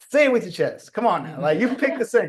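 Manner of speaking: high, emphatic, punchy hype-man delivery. Retell telling your dad that he picked the single, in a full Kevin Hart impression. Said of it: "I went full Kevin Hart".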